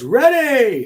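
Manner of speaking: very high yell. Retelling the photographer's call: imitating a yell. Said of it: "the photographer yells".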